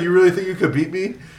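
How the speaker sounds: put-on Russian-accented speech. Retelling a press conference exchange, imitating Khabib in his Russian accent. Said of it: "in his Russian accent".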